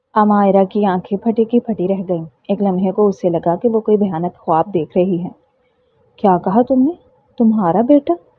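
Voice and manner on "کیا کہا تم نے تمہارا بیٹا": quivering, trembling, swooping voice of disbelief. Reading a story where a bride hears the baby is his: trembling voice. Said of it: "اس کی آواز کانپ رہی تھی".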